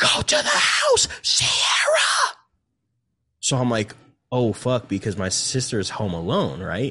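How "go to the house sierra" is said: very high, drawn-out scream. Retelling how someone screamed at her to get in the house: retelling someone's scream. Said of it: "this was like a scream".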